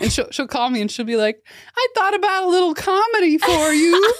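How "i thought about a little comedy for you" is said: very high, overbearing, domineering voice. Recounting their mom's phone calls, the speaker is imitating their mom's voice. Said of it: "I love your mom voice that you do".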